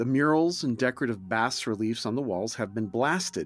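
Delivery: ordinary delivery, nothing marked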